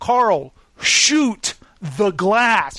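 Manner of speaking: acted, exasperated, fed-up, spelled out very slowly. Retelling a story amid gunfire, the speaker acts out a man finally fed up. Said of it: "finally he gets fed up and he goes".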